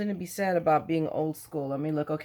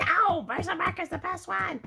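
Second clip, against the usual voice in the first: shrill, very high-pitched squealing scream; 13 semitones higher than usual. Imagining viewers objecting to the ink choice: imitating viewers screaming. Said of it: "screaming at me like".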